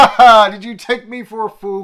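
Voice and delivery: loud, high, bellowing classical stage villain voice. Act out a scene where the villain speaks over the Tannoy, in Reeves's evil villain voice. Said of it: "he's doing his best evil villain voice".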